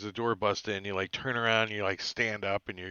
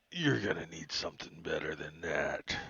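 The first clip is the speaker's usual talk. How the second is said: low, soft, growling werewolf voice; 5 semitones lower, 6 dB quieter than usual. Narrating a fight, voicing the stabbed werewolf: growling werewolf voice. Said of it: "And he just growls at you".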